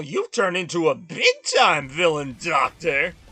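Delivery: exaggerated heroic voice. Recalling a favorite game scene, the speaker delivers the hero's line with exaggerated tone. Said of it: "I might be exaggerating the tone a little bit".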